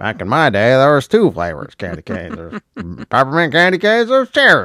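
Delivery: put-on grumbling old-timer voice, swooping pitch. Joking about candy cane flavors, griping about the past: put-on old-timer voice. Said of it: "I sound so old to be like".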